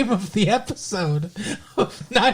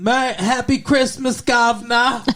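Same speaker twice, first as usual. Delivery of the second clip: slow, attempted put-on British accent; 3 semitones higher, 3 dB louder than usual. Christmas greeting while in england, in a put-on british accent. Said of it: "Is that a good British accent?".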